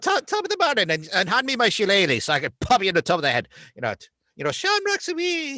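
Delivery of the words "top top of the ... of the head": loud, sing-song, exaggerated stage-Irish brogue. Mocking how some people sounded, the speaker does an Irish Spring ad Irish accent. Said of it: "sounded like they were in an Irish Spring ad".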